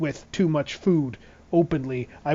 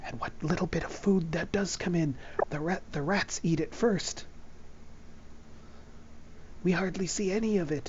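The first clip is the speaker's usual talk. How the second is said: secretive, hushed, breathy whisper; 12 dB quieter than usual. Voicing a mouse character who looks around before speaking, whispering. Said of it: "She kind of whispers around".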